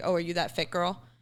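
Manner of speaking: normal talking voice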